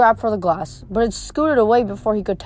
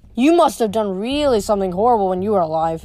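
plain

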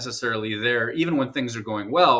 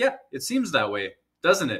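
dry delivery with a freely swinging tune; 2 semitones higher than usual. Speaker recounts Nate Schmidt's reply to Paul Friesen's question: imitating Nate Schmidt's deadpan. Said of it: "did one of those classic deadpans where he's like".

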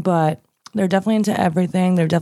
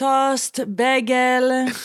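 Hebrew accent, much higher pitch; 6 semitones higher than usual. Asking a guest about hebrew food words, giving examples in a hebrew accent. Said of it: "an English word with a Hebrew accent".

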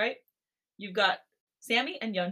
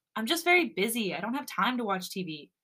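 ordinary delivery, nothing marked

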